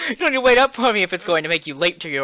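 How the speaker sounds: high, fast, giggling, laughing delivery.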